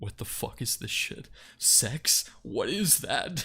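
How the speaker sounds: very deep, slow, dead serious voice. Showing the voice used for him, switching from a baby voice: very deep and serious voice. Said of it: "very deep and serious".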